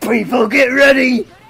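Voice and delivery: high, very loud cartoon villain shout. In a role-play, the speaker's attempted accent drifts into Goldar voice. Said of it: "You've just gone to Goldar".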